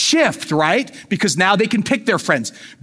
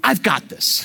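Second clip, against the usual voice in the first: mock confident, insistent tone. Acting out a kid insisting they are ready: imitating a confident kid insisting. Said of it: "your confident kid will insist".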